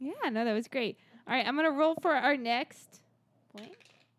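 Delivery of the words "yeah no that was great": sounding sarcastic. Agreeing after a listener's question was answered: sounding sarcastic. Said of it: "sounded really sarcastic when I said".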